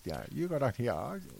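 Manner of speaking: put-on elderly storyteller voice. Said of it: "that old man voice".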